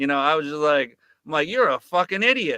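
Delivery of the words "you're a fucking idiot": put-on sarcastic tone, higher pitch. Retelling own tone in the interview: imitating own sarcastic tone. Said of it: "the tone of sarcasm coming out of my mouth".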